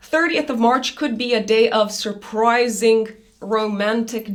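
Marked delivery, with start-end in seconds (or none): none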